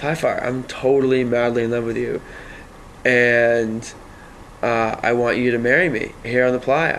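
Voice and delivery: normal talking voice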